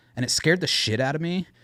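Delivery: plain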